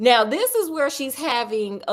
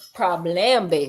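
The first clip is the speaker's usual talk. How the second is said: fake Creole accent, pitched lower; 5 semitones lower than usual. Repeating a word from the story for a listener: put-on Creole accent. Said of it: "It's Creole".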